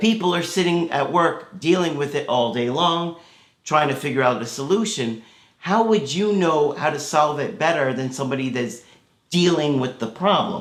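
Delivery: ordinary talk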